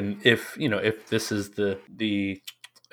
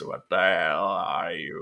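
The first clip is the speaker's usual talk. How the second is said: put-on gurgling voice, lower; 3 semitones lower than usual. Showing how a certain figure speaks, in a gurgling impression of him. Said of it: "he has a thing that gurgle this".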